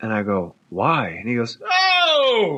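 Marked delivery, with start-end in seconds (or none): 1.6-2.6 loud, very high, stretched-out "oh" yell. Retelling his answer after being asked why, imitating a loud yell. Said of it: "like yell loud".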